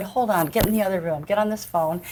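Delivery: plain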